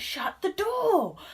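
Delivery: clumsy put-on Italian accent, very high pitch. Retelling what a man at reception told the speaker: bad italian accent. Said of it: "I cannot do an Italian accent".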